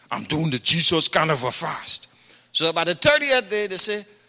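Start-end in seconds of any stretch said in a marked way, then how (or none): 0.1-2.1 low voice in a particular speaking manner. Retelling how a fasting man talked: imitating Fire's way of talking. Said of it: "he talks like this".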